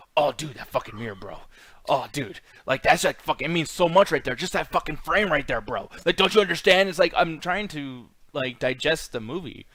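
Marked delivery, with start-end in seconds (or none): 0.1-6.9 gushing, enthusing, pretentious film snob voice. Imitating a friend who over-explains movie frames while watching. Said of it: "I'll do the impersonation of the voice".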